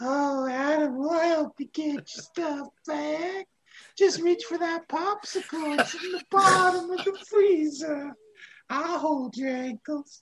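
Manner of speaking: very high, cartoonish old-man voice. Describing masked guys offering Adam help; Family Guy old man voice. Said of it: "it almost bordered on that".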